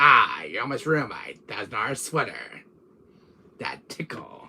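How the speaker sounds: put-on character voice with British accent. Speaker shows how he practised Wesker's voice, Wesker voice with British accent. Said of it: "Good voicing".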